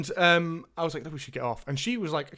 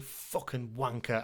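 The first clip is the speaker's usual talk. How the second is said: put-on mutter under breath, much lower and quieter; 5 semitones lower, 8 dB quieter than usual. Speaker acts out walking away from people who block the way: retelling muttering under breath. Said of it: "under my breath".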